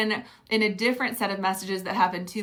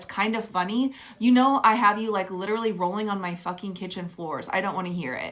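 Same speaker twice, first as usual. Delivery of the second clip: normal talking voice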